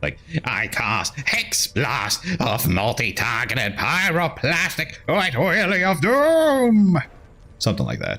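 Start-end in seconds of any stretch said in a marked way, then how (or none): 0.4-7.0 very high, slow, over-the-top intoning wizard voice. Explaining a game's house rule for how to talk, in an exaggerated wizard voice. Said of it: "in a really exaggerated wizard voice".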